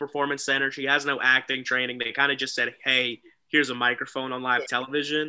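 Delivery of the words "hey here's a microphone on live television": ordinary delivery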